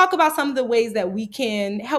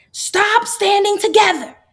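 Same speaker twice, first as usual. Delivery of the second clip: very high, shrill, loud shout; 9 semitones higher, 6 dB louder than usual. Retelling a librarian shouting at a group of boys: imitating a shout. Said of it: "she shouts at that congregation of boys".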